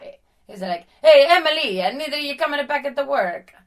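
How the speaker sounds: very loud, high, bad put-on Italian accent. Retelling her manager calling Emily back to work, in a bad Italian accent. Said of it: "Why are your people always bad Italian accents?".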